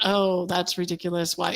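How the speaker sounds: ordinary talk, nothing marked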